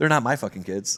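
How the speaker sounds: mock loud, mean tone. Retelling how a friend answered a woman at a resort, imitating a louder, meaner retort. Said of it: "She said it louder and meaner".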